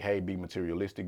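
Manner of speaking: ordinary talk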